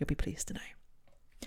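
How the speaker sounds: soft whispered aside.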